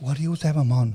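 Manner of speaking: put-on soft voice with no bass. Mimicking viewers asking why he always has the guest on, soft voice with no bass. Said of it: "betas with soft voices and no bass in your voice".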